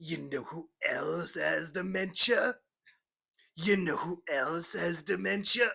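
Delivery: cartoon character voice, kept up throughout. Recalling being dressed as Muscle Man and doing his voice: Muscle Man voice. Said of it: "doing the Muscle Man voice the whole time".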